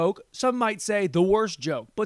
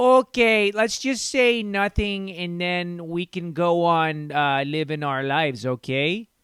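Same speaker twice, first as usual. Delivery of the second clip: slow, put-on, attempted Canadian accent; 2 semitones lower than usual. Mocking Canadians, trying out an attempted Canadian accent. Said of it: "How the fuck does a Canadian accent even sound?".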